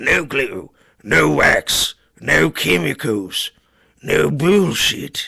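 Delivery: loud, put-on underground creature voice. Redoing a line at another speaker's request, as a Morlock from under the sewer. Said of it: "do it like a Morlock who lives 2 degrees underneath the sewer".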